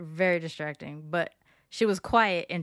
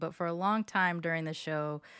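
normal talking voice

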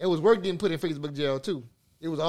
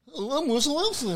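put-on proper-talking voice, pitched higher; 8 semitones higher than usual. Mocking a football player's way of talking: Russell Wilson impression. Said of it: "That's how he talk".

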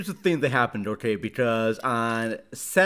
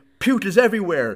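put-on high, loud, frantic hysterical panic; 8 semitones higher, 6 dB louder than usual. Telling the listener what they said on a phone call, imitating hysterical panic. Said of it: "But you're hysterical saying".

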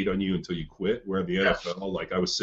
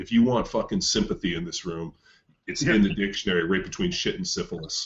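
plain

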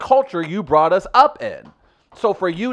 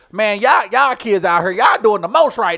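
put-on elderly voice, higher pitch; 3 semitones higher, 3 dB louder than usual. Imitating older folks complaining about kids these days: impression of older folks talking. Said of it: "a really good impression of my aunt".

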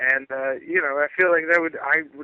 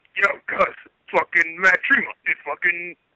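demonic devil voice, higher; 3 semitones higher, 4 dB louder than usual. Asked to do the devil voice out of anger, cursing someone out: devil voice. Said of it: "Do the devil voice".

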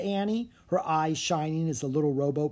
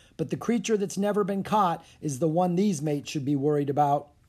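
usual speaking voice

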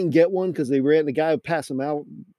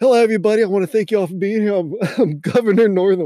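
put-on, high, raised yell calling out far; 5 semitones higher, 4 dB louder than usual. Retelling a man walking through a big crowd, imitating a man yelling. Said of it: "he was yelling this he goes".

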